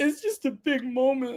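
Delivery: play-acted, very high, drawn-out blubbering sobbing. Retelling answering someone at the bar who asked why: imitating own past sobbing. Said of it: "Why are you crying?".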